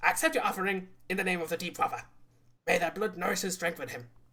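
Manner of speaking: slightly high but still gravelly voice. Narrating a scene, voicing the younger archpriest in a higher-pitched gravelly voice. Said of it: "trying to do a slightly higher pitched but still gravelly voice".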